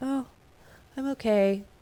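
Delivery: moody, gloomy, down-in-the-dumps depressive tone. Repeating how he talked to show his mood: imitating someone's depressive way of talking. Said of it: "when I heard him talk like that".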